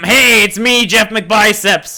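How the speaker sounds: put-on puffed-up, macho muscleman voice. Mock audition for Disney, acting like a buff man online: Jeff McBiceps voice. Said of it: "I will act like a buff man online".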